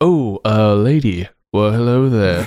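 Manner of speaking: put-on slow, drawling, unconvincing British accent. Imitating the prince's accent from the film, greeting a lady: imitating Jake Gyllenhaal's bad accent.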